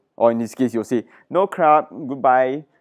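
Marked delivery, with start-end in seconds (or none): 1.3-2.6 clumsy, bad put-on Thai accent. Acting out what someone will say in this case, in a bad Thai accent. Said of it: "That was a bad Thai accent".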